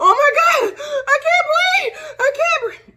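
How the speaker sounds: acted gasping, breathless panic, very high and loud. Retelling an attack where breathing stopped, imitating gasping for breath. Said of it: "this is how I was".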